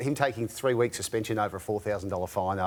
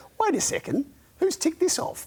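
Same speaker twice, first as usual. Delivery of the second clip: very high, squeaky mock coach voice. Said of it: "He goes".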